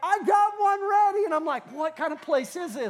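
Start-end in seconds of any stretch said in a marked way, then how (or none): 0.0-1.2 play-acted, high, called-out yell. Telling a story, acting out a guy inside the room retelling a yell. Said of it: "yells back".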